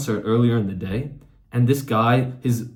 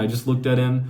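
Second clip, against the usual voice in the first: ordinary talk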